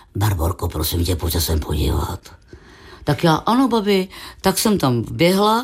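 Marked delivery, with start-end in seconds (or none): 0.2-2.2 very deep, low voice calling out. Retelling how her grandmother called her over to look: Věra's deep voice. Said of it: "tak na mě volá tím hlubokým hlasem".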